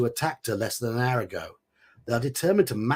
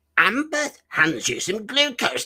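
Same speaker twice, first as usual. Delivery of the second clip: very high, squeaky goblin character voice; 9 semitones higher than usual. Reading a line while trying out a character from last night's game, goblin voice. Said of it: "I'm going to read this in my goblin voice".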